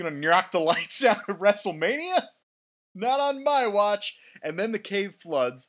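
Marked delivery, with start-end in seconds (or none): 0.0-4.2 put-on Boston accent, pitched higher. Repeating John Cena's line with his comeback, in a Boston accent. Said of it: "that's the most Boston guy".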